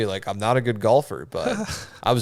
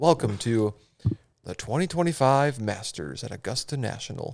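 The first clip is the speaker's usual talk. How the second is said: bad put-on golf announcer voice, quieter; 5 dB quieter than usual. Welcoming viewers to the Masters: bad Jim Nantz voice. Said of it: "I can't do a good Jim Nantz voice".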